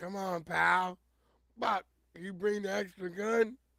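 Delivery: loud hollering. Describing a man with his dog, imitate him yelling at the dog. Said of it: "He be yelling at the dog".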